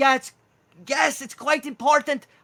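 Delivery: put-on high, loud Welsh kind of accent. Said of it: "He speaks in, like, a Welsh kind of accent".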